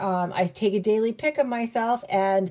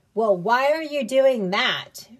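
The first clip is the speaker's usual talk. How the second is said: snarky, sassy, sarcastic, mocking tone; 3 semitones higher than usual. Advising listeners how not to ask someone their whys, sassy tone. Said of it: "In that tone, like sassy".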